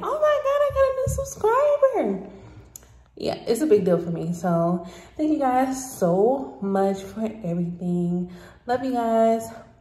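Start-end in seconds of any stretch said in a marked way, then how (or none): 0.0-2.3 very high, swooping, thrilled yell. Telling your viewers how you react to each new subscriber, retelling an excited yell. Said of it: "I'm in here yelling like".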